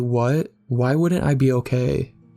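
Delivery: plain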